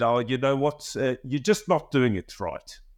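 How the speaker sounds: put-on South African accent. Retelling what a young golf assistant pro said: South African accent. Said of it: "forgive the accent".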